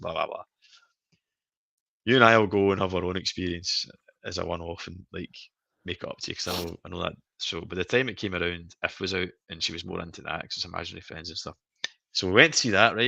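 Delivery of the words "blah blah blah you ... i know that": ordinary talk, nothing marked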